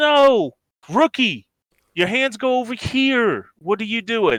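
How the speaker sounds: bad New Jersey accent. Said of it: "I don't have a Jersey one either".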